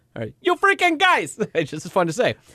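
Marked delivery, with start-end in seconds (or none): 0.4-1.4 very high-pitched, put-on New York accent. Saying a favorite phrase again just for fun, in a New York accent. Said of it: "like New York".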